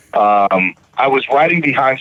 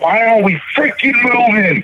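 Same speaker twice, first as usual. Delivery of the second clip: put-on pissed-off outburst, pitched very high; 12 semitones higher than usual. Retelling being stuck in stadium traffic: imitating own angry outburst. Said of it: "I'm pissed".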